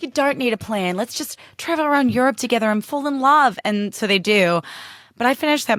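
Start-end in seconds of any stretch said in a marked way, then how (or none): 0.0-3.6 put-on New Zealand accent, pitched up. Retelling a movie's message by imitating an actor: KJ Apa New Zealand accent. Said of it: "with his, like, New Zealand accent being like".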